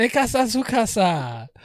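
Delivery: high, mock Chinese accent on Spanish.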